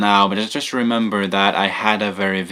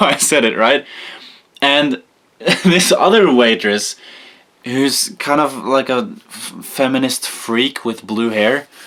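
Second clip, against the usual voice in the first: ordinary talk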